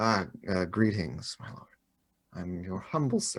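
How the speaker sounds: fawning, simpering, servile bowing-and-scraping voice. Greeting a lord as he pulls his helmet off: simpering, servile. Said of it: "I'm all like simpering and bowing".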